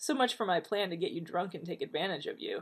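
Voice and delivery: ordinary delivery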